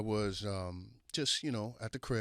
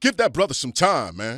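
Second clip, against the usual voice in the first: put-on booming, very loud, high-pitched Nigerian accent; 6 semitones higher, 16 dB louder than usual. Retelling what David said on the phone, imitating David, Nigerian accent. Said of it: "with a Nigerian accent".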